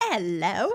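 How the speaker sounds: terrible, horrendous put-on British accent. Joking about a recast Christopher Robin: horrendous British accent. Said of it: "my impression is horrendous".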